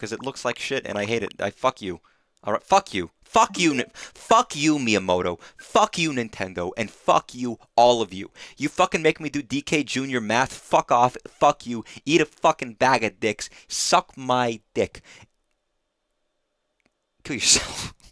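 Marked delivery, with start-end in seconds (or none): 1.4-17.9 fake furious, mock-upset rant, drawn out. Ranting at a game that has come up: mock-upset angry rant. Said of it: "I'm getting very upset about Donkey Kong Junior Math".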